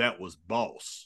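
deep put-on voice. Retelling a fight story where Ron leans down and speaks, deep James Earl Jones voice. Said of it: "with that deep James Earl Jones voice".

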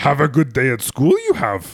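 silly character voice with big pitch swoops. A dad shows the voice his son dislikes: Yoda voice. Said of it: "when I do my Yoda voice".

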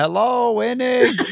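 very high, calling-out yell. Retelling driving around looking for a dog, retelling own yelling for a dog. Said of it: "can't understand when I'm yelling".

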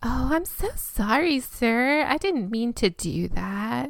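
put-on little valley girl sound. Retelling what she said to an upset man on the phone, valley girl voice. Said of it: "that sounded like a little valley girl".

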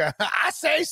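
high, blustering cartoon rooster drawl. Describing how a man sounded when he spoke: Foghorn Leghorn impression. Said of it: "He sounded like a Foghorn Leghorn".

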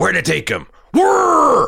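very high, loud, swooping, throat-straining delivery. Retelling a favorite line from the show, imitating Daryl Dixon. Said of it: "my throat's only good for one of those".

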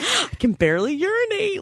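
very high, giddy, swooping excited voice. Repeating the movie character's line: imitating excited boasting. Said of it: "she's so excited".

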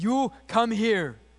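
put-on speaking with a Bulgarian accent. Imitating a man who would grab people and pray for them, in a put-on thick Bulgarian accent. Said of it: "he spoke that thick Bulgarian accent".

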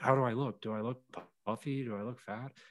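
frantic, panicked, freaked-out fretting. Speaker retells a dude freaking out to him, imitating someone freaking out. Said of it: "the dude literally freaked out to me".

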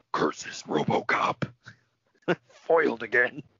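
breathy, whispered cartoon-villain voice. Wishing a wrestler had said this on the mic, in Ole's claw voice. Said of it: "drop into that claw voice and been like".

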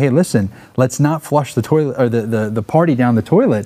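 usual speaking voice

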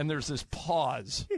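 ordinary delivery

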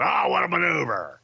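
put-on wrestling announcer voice. Retelling teasing the announcer to his face: Vince McMahon announcer voice. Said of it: "we would just bust his balls with".

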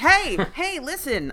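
nagging sidekick voice. Joking that a talking hat is like Navi: Navi voice. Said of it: "It's like the new Navi".

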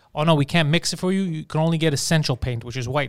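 ordinary talk, nothing marked

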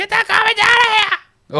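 very high, crackly, put-on arena announcer cry. Doing the Raptors announcer's call about a player: Raptors announcer Jack voice. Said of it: "I'm gonna do the voice".

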